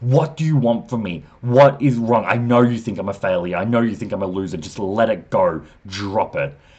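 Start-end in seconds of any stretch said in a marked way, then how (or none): 0.0-4.6 mock annoyed, fed-up screaming. Retelling an anime scene where a son confronts his father: imitating a scream. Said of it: "screams at his dad".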